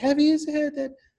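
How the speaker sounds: very high-pitched pixie voice.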